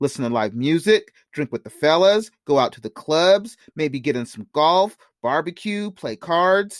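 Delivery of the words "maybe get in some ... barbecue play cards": plain reading voice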